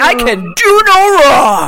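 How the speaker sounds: slow, loud, cocky, overacted boastful shout. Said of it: "He was like".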